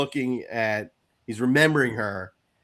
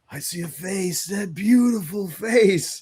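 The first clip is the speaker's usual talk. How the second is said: play-acted woozy, groggy, dazed voice, higher; 8 semitones higher, 3 dB louder than usual. Retelling a scene where Duke wakes from a coma, imitating dazed Duke. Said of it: "people coming out of like anesthesia".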